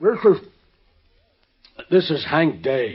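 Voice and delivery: mumbling through a mouthful. On the phone, a man tells Mike who is calling, talking with mouth full. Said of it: "Sound like you had a mouthful of mush".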